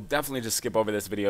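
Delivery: fast, rushed-through talk. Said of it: "God, I'm talking really fast".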